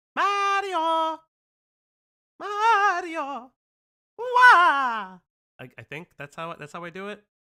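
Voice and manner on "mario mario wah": very high, loud cartoon yell with wah stretched. Imitating a cartoon plumber calling for his brother: Luigi voice. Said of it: "Luigi's like".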